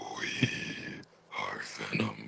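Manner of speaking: rough, breathy, hushed sighing rasp. Showing how to do the voice: Venom voice, rough sigh. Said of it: "that rough sigh, and then that little vibration in the voice".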